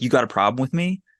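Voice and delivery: ordinary talk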